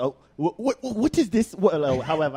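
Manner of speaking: put-on prim, very proper British accent, stammering. Imitating a parent asking about sex: imitating mom's proper British accent. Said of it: "person trying to talk to you mad proper".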